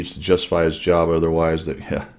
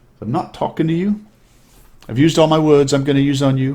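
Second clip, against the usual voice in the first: put-on very high, childlike little-girl English accent; 9 semitones higher, 4 dB louder than usual. Quoting a precocious little girl who had finally been fed up, little English accent. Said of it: "in her little English accent".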